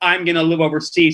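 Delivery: ordinary talk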